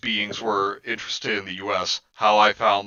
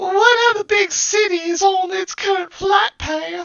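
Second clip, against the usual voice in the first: squeaky, shrill put-on voice, very high and raised; 5 dB louder than usual. Reading a line aloud as a character. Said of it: "gotta do my best Kenzie impression".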